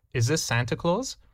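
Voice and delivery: small, tiny-voiced delivery. Retelling a phone call to a defense office: imitating a tiny little voice. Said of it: "he hears a tiny little voice which says".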